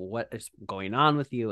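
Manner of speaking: normal talking voice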